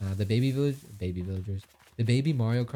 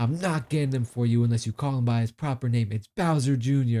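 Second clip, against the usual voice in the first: mock irritated, annoyed lecturing tone; 3 dB louder than usual. Retelling what the older brother said: imitating an annoyed brother. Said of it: "He was so tight".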